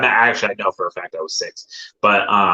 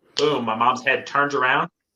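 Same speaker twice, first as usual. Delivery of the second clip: ordinary talk, nothing marked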